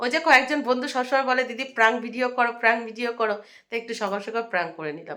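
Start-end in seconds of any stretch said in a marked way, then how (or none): none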